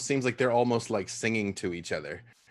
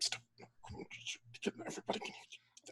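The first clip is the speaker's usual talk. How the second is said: hushed, whispered mutter under the breath. Voicing a character who tells a companion to stop: muttering under her breath. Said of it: "under her breath".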